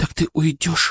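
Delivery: frightened, scared tone. Reunited with her son Denis, his mother asks him: frightened question. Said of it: "спросила она испуганно".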